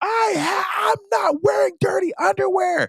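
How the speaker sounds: very high-pitched, slow weeping sobs. Retelling a video of a man at work who cries: imitating a man crying. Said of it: "And he's, like, crying".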